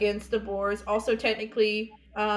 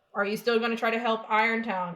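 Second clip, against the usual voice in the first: plain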